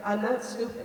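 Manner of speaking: ordinary talk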